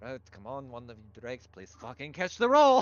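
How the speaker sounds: low muttering. Voicing a character urging the drakes to catch: muttering under her breath. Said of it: "It's like under her breath".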